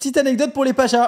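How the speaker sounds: very high, loud hollered shout. Starting a new anecdote for the viewers, shouting. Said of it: "Pourquoi tu cries ?".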